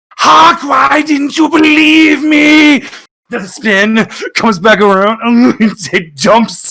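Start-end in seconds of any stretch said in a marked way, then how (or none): 0.2-2.8 high, slow, drawn-out mock dramatic shout. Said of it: "he's going like that, just going".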